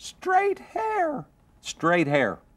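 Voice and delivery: tiny, very high-pitched demon voice. Retelling a confrontation with a demon, the speaker voices its reply in a little voice. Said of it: "this little voice comes out of her mouth".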